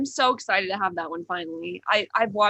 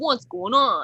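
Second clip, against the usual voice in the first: imitated cartoon dog character voice; 3 semitones higher, 4 dB louder than usual. Describing a cartoon character and imitating his voice: imitating Rude Dog's voice. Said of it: "and he's like".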